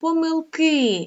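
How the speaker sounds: помилки with stress on final ки, drawn out. Teacher demonstrating how to pronounce помилки: stress on final syllable ки. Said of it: "лише один наголос на останню голосну літеру «и»... Ми протягуємо останній звук".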